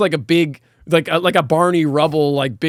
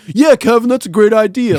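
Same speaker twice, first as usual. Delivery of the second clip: loud, high, dopey, doofy sidekick voice; 6 semitones higher, 5 dB louder than usual. Describing a sitcom's stereotypical doofy best friend: imitating a doofy best friend. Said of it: "the stereotypical, like, doofy best friend. It's like".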